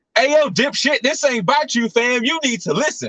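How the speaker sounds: high-pitched, angry, confrontational street-talk rant. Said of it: "It sounded like D M X".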